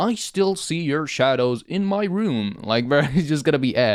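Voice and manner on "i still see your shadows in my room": slow robotic voice like a text-to-speech app. Imagine aloud how stupid it would sound in a serious situation, doing the TikTok voice. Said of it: "imagine the, the TikTok voice".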